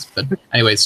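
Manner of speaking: very fast speech, rattled off quickly.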